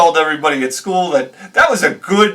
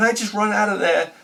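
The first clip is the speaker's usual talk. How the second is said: ordinary talk, nothing marked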